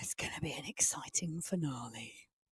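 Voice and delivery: dramatic, very quiet, hushed theatrical whisper. Co-commentating a race as the final climb nears, dramatic and very quiet. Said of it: "in a very dramatic voice at a very low volume".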